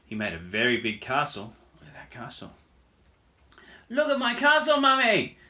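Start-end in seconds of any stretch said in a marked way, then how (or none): 3.9-5.2 shrill, very high, very loud shout. Narrating a children's story, Little Fox calls to his mummy, shouted. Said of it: "he shouted".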